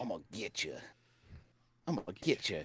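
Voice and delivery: put-on Texan accent. Repeating a line in an impression: George W. Bush impression. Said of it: "that's like a George W. Bush".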